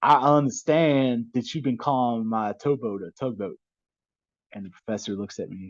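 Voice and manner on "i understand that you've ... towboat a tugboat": put-on thick Louisiana accent, spoken slower. Retelling how Captain Todd came into the classroom, in his thick Cajun accent. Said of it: "big old thick Cajun accent".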